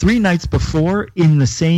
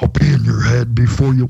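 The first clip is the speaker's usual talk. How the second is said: eerie, creepy voice, close and low; 5 semitones lower than usual. Retelling a voice heard at three o'clock at night, imitating a creepy voice heard at night. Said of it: "I did it perfectly".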